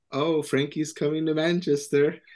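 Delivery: put-on, sarcastic delivery. Retelling what a player's girlfriend posted, imitating a sarcastic post. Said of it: "posted something sarcastically saying".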